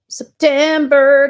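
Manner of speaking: abrupt, loud, high shout of one word. Starting to read out a dated news item, yelling. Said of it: "I'm so sorry to yell".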